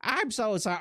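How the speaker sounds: very high, put-on British woman's voice. Trying out a voice for a character who apologizes, female British voice. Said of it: "I'll give it that voice".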